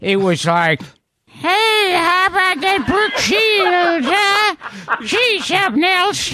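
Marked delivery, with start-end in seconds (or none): 1.2-6.3 put-on very high-pitched, frail, elderly-sounding voice. Describing Bob Hope late in life, acting out his voice: imitating frail old Bob Hope. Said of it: "when he became older then and frail".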